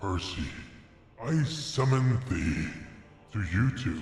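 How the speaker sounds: artificial deep distorted voice. Streamer acts out what Shady said to summon Percy, Shady's voice via voice changer. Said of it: "I had to do it in this voice".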